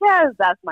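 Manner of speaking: dejected, deflated, disappointed, let-down voice. Admitting that the losing team is their own team: disappointed. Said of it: "She said it all disappointed".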